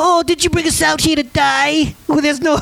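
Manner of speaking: put-on high-pitched, Yiddish-inflected accent slipping in.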